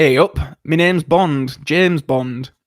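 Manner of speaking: slightly camp northern English accent. A Bond introduction done as a slightly camp northern English Bond. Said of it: "That's my slightly camp northern Bond".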